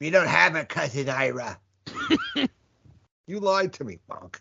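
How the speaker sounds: put-on movie character voice, high, swooping, wide pitch. Quoting Throw Mama from the Train: Ann Ramsey voice. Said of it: "It's like, uh, Ann Ramsey from".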